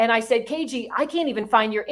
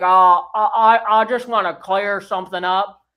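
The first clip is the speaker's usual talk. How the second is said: eerie, creepy, halting stammer, raised pitch, loud; 3 semitones lower, 5 dB louder than usual. Quoting a man speaking on a Zoom live: Sling Blade voice. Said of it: "the most creepy voice I've ever heard".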